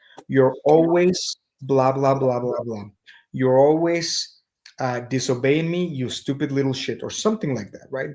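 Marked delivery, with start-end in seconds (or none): none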